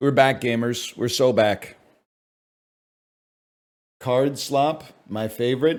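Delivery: rough, hoarse, croaky frog-like voice. Streamer greeting gamers on being back, in a croaky frog voice. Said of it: "Sorry, frog voice".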